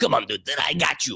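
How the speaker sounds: mock-cocky, swaggering voice. Telling others about a guy who got cocky, imitating a cocky guy. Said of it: "They get super cocky about it".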